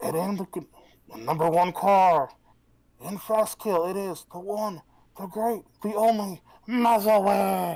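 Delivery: very loud, high, little goblin-like growl. A tabletop player speaks as their character in a little growly goblin voice. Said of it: "Get another little goblinish voice".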